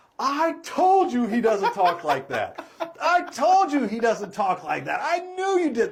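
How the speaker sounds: acted, high, loud yelling through laughter. Retelling the wife's outburst to her husband: imitating someone yelling while laughing. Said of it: "starts laughing and yells at her husband".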